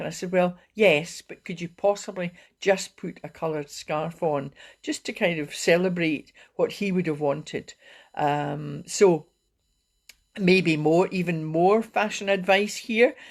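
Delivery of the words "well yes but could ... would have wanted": normal talking voice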